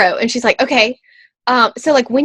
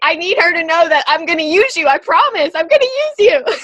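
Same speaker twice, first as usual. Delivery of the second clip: high, terrified, timid, frightened voice; 6 semitones higher than usual. Retelling a timid woman's promise, imitating a terrified woman. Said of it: "this poor timid woman was like terrified".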